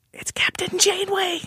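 very high, grave whisper. Announcing a surprise guest for gravity: whispering. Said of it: "I'll whisper it like I whispered".

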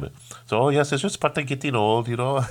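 put-on Indian accent. Retelling what an Indian lady told them, imitating her Indian accent. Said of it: "I'm going to try to do her accent as best I can".

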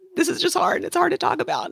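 crying, tearful, very high, swooping, rushed words. Talking about their boys nearing their teens, crying. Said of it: "I'm crying".

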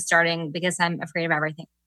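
said very fast, rattled off in a rush. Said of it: "I love the way that you just said that really fast".

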